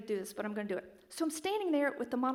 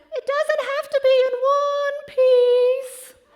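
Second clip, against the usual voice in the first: very high, loud, booming, eerie falsetto; 14 semitones higher, 17 dB louder than usual. Retelling a huge man speaking from deep in a crawl space, imitating a creepy falsetto. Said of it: "in the creepiest falsetto I have ever heard".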